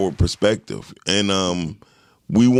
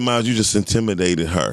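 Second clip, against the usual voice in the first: ordinary talk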